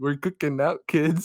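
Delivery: high-pitched, jokey, tossed-off delivery. Retelling how the burned Leprechaun jokes: imitating the Leprechaun joking with a smile. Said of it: "he makes a joke with a smile on his face".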